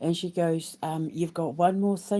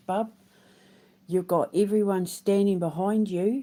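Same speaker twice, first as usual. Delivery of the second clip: put-on New Zealand accent, laid on thick; 2 semitones higher, 3 dB louder than usual. Retelling what a woman said after giving the speaker a hongi, in a put-on Kiwi accent. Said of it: "I don't know why I'm really putting on the Kiwi accent".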